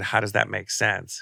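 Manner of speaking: ordinary talk, nothing marked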